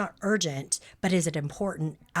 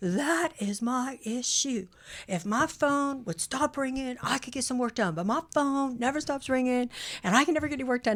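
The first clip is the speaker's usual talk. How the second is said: mock full venting rant, pitched up, unrestrained; 7 semitones higher than usual. Retelling a workshop participant's complaint about interruptions: imitating a venting outburst. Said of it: "she went off".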